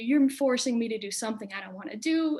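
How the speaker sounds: imitated yelling. Retelling own side of a yelling match with a teacher: retelling own yelling. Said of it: "big yelling match".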